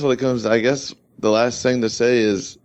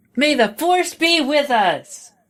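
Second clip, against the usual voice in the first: extremely high, squeaky, obnoxious voice. Show what Luke says when he runs onto the battlefield, in an extremely high-pitched, obnoxious Luke voice. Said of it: "extremely high pitched and like obnoxious".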